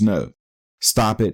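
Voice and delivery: ordinary talk, nothing marked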